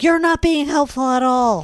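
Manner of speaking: full-blown, loud, shrill panicked screaming. Retelling a panicked moment at the emergency search, imitating someone screaming. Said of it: "screaming at him, being like".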